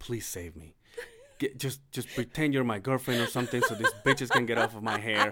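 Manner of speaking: hushed half-whisper, close in the ear. Retelling a hug, the speaker repeats what they half-whispered in her ear, half-whispering. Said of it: "I'm whispering".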